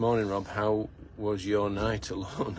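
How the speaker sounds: usual speaking voice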